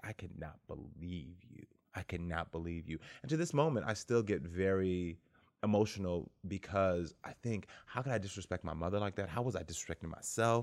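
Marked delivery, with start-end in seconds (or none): 0.0-3.0 put-on disgust, quieter and slower. Retelling how the speaker's mother turned and looked at them: imitating her disgusted voice. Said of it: "looked at me so disgusted".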